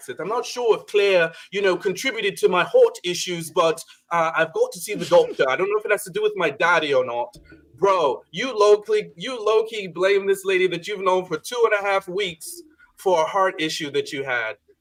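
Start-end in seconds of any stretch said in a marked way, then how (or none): 0.2-7.4 put-on New Zealand accent, plain conversational delivery. Quoting a man the speakers are discussing, in a New Zealand accent. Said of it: "with his uh, you know, New Zealand accent".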